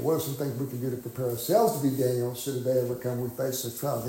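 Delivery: ordinary talk, nothing marked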